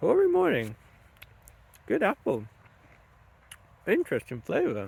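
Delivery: words pushed through a mouthful. Tasting apples and commenting on them: talking with mouth full of food. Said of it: "with my mouth full of food".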